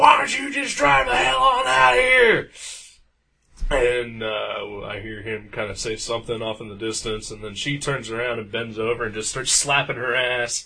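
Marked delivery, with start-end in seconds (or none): 0.0-2.5 mock very high, creaky, rough hollered shout. Retelling a neighbor's fight in the parking lot: imitating a woman yelling. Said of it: "turns around and yells, and is like".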